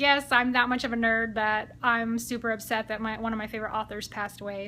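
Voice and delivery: ordinary talk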